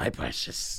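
soft, breathy whispered character voice. Joking about guarding a photo someone sent you: Gollum voice. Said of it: "treat it like you're fucking Gollum".

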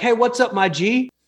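put-on slow, high-pitched Brooklyn street-kid accent. Retelling a kid greeting him in a military store, in a Brooklyn accent. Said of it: "This kid sounded like he was from Brooklyn".

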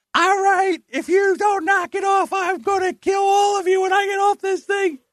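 shrieking, very high-pitched screaming. Retelling how a client muted the microphone to scold noisy kids: imitating someone screaming. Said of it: "she screams".

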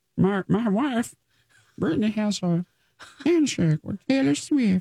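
very high, squeezed-up frog-puppet voice. Playing the quarterback while the hosts discuss him, Kermit-like Patrick Mahomes impression. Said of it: "That's how he talks, like Kermit".

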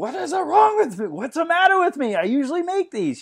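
very high, shrill screamed outburst. Retelling a TV scene after a missed basketball shot: imitating someone screaming. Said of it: "he turns around and he screams".

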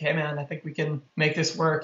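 ordinary talk

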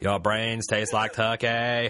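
put-on zombie voice with Boston accent. Hosts imagining zombified celebrities; one tries a zombie Ted Kennedy voice. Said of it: "What would he sound like saying brains?".

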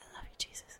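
whispering. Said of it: "I'm whispering my own ear".

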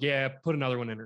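ordinary delivery

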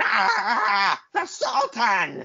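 very high, slow, unhinged rant. Retelling a wrestler grabbing a mic on the apron: imitating Bob Backlund going nuts. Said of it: "just starts going nuts".

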